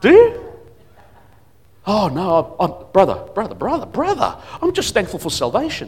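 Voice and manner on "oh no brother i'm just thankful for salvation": mock-groveling, servile, much quieter. Speaker asks listeners what they ask God for, then acts out a believer's reply, mock-groveling. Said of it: "like a groveling servant".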